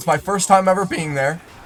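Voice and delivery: voice breaks and cracks on a word mid-line. Telling about going to the hospital for the first time; voice cracking. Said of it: "voice crack".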